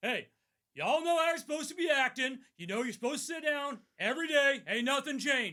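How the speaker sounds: acted sergeant-style commanding voice, loud, pitched way up. Retelling telling middle school boys in pe to sit down: loud command voice. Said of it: "I use what's called the command voice".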